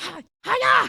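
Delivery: put-on shouty voice. Copying a voice another speaker just did, imitating a shouty voice. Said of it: "It's a shouty thing".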